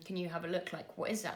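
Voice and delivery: ordinary talk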